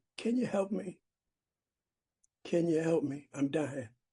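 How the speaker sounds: put-on tearful, desperate, begging cry. Retelling a prayer at a sponsor's urging: retelling crying plea. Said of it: "I started crying and said".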